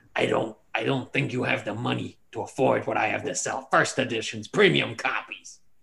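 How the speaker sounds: gritty, rough, creaky goblin voice. Voicing a half-goblin merchant who greets the group at his stall: half-goblin merchant voice. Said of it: "he says".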